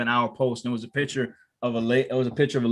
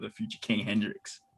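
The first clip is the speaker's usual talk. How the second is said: heavy, mocking sarcasm, as sarcastic as possible; 3 semitones lower, 10 dB quieter than usual. Naming a figure from a meme page, sarcastic. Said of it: "I say this with all the sarcasm in the world".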